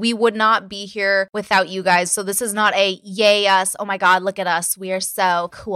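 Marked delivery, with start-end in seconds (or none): none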